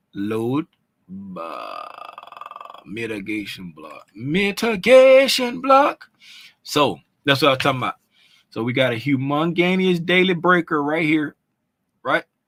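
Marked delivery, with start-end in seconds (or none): 0.1-6.0 bad put-on Jamaican accent, very slow, sing-song. The speaker announces the next steps in his horrible jamaican accent. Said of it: "My horrible uh, Jamaican accent".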